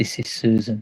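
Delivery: very quiet, hushed, soft-spoken. A man slides open a door's viewing window and speaks very quietly. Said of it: "And he says very quietly".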